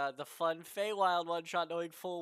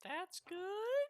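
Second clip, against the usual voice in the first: frightened, scared, very high-pitched voice; 5 dB quieter than usual. At the end of a turn in a tabletop game, a player asks the game master, scared high-pitched voice. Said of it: "in a scared high pitched voice".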